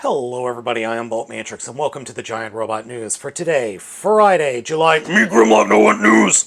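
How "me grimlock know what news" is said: deep, very loud, rough, booming voice. Voicing a toy who barges into the news segment: Grimlock voice. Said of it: "Hi, Grimlock".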